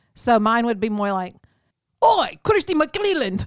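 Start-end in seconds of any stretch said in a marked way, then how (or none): 2.1-3.5 bad Irish accent, pitched up high. Asked to read a name in an Irish accent: bad Irish accent like Ted Lasso. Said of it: "because I've been watching Ted Lasso on Netflix".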